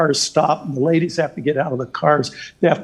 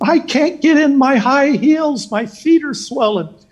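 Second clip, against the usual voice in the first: play-acted shrill shrieking scream, very high; 12 semitones higher, 4 dB louder than usual. Retelling a story from an insider book: imitating a scream. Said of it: "she screams and says".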